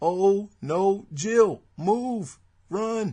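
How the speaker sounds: stiff, wooden, very slow, mechanical line reading. Recalling old PlayStation game voices, the speaker does mechanical Resident Evil voice acting. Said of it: "the voices were so mechanical".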